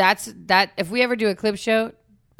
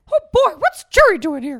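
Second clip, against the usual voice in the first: pitched up, swinging widely in tune; 9 semitones higher, 7 dB louder than usual. Teasing a co-speaker for always crowbarring in his impression, Mickey Mouse impression. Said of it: "You really try to get that impression in".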